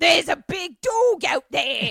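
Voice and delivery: very loud, high, ghoulish matron voice. Retelling a story, the speaker quotes the matron in a ghoul voice. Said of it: "she's got like a ghoul voice".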